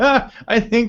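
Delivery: high, laughing through the words. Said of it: "I'm sorry, I'm laughing".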